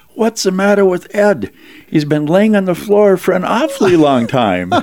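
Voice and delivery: put-on very high, loud, squeaky five-year-old voice. Retelling what a five-year-old nephew said during the litany: squeaky little-kid voice. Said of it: "this little squeaky voice that a five-year-old could say was".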